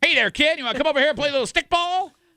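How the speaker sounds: put-on old-timey forties street talk. Mocking the other's request as 1940s baseball talk: imitating old-timey 1940s talk. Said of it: "are we playing baseball in the nineteen forties?".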